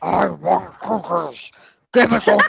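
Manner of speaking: deep growl from the throat. Asked what Cookie Monster says, the speaker answers in a Cookie Monster voice. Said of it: "and me through throat".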